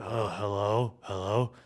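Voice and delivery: low, soft, weary, worn-out voice. Recounting how callers mimic him, repeating their imitation of his own tired voice. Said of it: "you sound like this".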